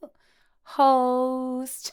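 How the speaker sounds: voice cracking high and loud.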